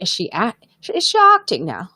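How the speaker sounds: put-on British accent, swooping pitch, with a restart. Retelling a friend's doubtful question: imitating Lois in a British accent. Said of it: "I'm doing a British accent now".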